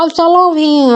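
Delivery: voice forced through the nose. Retelling a story, a character speaks near someone's shoulder: nasal voice. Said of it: "ऐसा करके कहता है नाक से आवाज निकाल के".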